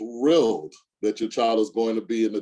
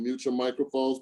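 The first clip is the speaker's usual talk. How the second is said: normal talking voice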